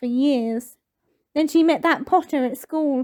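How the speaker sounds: ordinary delivery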